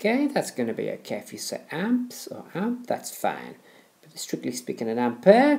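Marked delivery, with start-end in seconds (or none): 4.9-5.6 put-on, jokey French accent, pitched up. Explaining electrical units, saying ampere in a silly french accent. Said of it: "I'll stop using the silly French accent".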